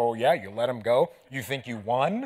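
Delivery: mock, put-on chuckling under the breath. Retelling a pastor's reaction to being let go, imitating chuckling under breath. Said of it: "the pastor's like chuckling under his breath".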